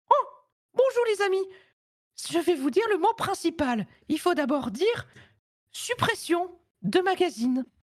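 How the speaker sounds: very high, squeaky little cartoon mouse voice. Speaker offers the group an impression and does a Mickey impression. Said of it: "super imitation de Mickey".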